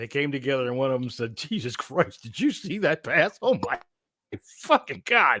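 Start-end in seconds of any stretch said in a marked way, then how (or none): 1.4-5.4 slow, stunned, shocked, incredulous official-sounding outburst. Doing an impression of referees in a huddle on that play: imitating a shocked referee. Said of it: "here's my impression of the huddle of referees".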